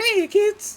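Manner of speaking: very high, loud, squeaky cartoon voice. Explaining how they keep a voice uniform: Mickey Mouse voice. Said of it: "the Mickey Mouse voice ... It's a little squeaky".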